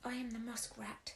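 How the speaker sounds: weak, faint voice. Narrator reading a wretched creature introducing itself, faint. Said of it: "said the wretched creature faintly".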